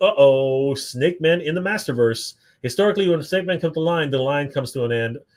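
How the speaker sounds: ordinary talk, nothing marked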